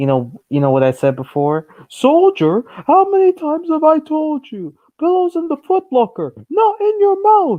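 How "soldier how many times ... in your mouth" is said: shrill, very high, loud, swooping drill-sergeant yell. Retelling a funny boot camp scene: imitating a sergeant yelling loudly. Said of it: "one of the sergeants yelling so loud".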